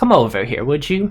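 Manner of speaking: put-on very old elderly woman's voice. Voicing a very old woman in a rocking chair: very old woman voice. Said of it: "very, very old woman".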